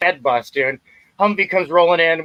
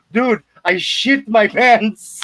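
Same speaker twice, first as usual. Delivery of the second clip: very slow, high, broken English, word by word; 5 semitones higher than usual. Retelling what one of the patrol guys said afterwards: imitating broken english. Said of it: "he spoke, like, this broken English".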